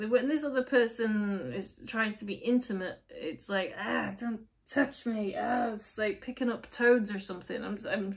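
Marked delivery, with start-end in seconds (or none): 3.8-5.3 very British, squirming, grossed-out recoil of aversion. Acting out a person who recoils from a partner's touch: very british way. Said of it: "say it in a very British way".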